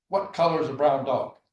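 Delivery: bellowing, very loud scream. Retelling an army captain answering a recruit's question: captain screaming. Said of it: "the captain just screaming at him".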